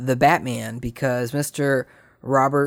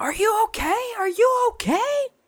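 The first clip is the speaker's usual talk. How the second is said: shrill, very high, rising shout. Speaker recounts a driver calling out her window after a crash, imitating a mom shouting. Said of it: "she rolls down her window and starts shouting at him".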